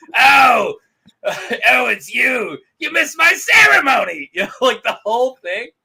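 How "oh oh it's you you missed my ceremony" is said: full comic villain voice, loud, slow, drawn-out. Imagining a Lion King scene, the speaker voices Scar, going full Gilbert. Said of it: "just go full Gilbert".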